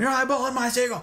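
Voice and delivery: acted-out, very high, shrieking drill-sergeant scream. Telling how a drill instructor yelled at a kid over a seagull, retelling his screaming. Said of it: "he's screaming at him".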